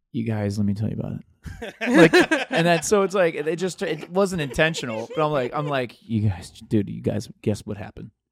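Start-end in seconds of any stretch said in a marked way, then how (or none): 6.0-8.1 low, loud, bassy bro voice. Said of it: "here comes Cock Voice".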